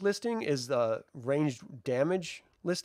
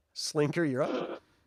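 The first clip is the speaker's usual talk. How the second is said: plain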